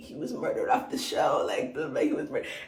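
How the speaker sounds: mock breathy, tearful, crying whisper. Retelling what a contestant said about a banished player, imitating someone crying. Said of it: "crying, like, single tear crying".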